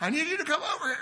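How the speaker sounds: put-on shrill, high, loud far-carrying holler. Describing people calling to each other across a store, the speaker quotes one: retelling yelling across store aisles. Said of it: "than yelling for each other across the store aisles".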